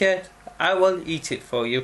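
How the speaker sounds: ordinary delivery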